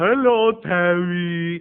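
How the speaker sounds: loud, big, drawn-out delivery of the name. Retelling how a woman answered the speaker's excited greeting: imitating Marta Annalena's voice. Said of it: "she talks like this".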